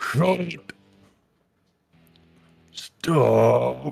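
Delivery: rasping, grunting, high, rough demon yell in half-words. Describing demons heard below, imitating their yelling. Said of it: "these people are yelling".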